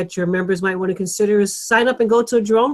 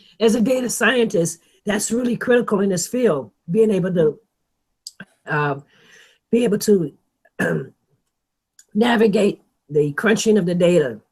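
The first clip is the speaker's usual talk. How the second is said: voice giving out, failing. Answering a listener's question, voice giving out. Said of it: "sorry, my voice is going".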